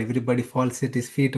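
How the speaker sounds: normal talking voice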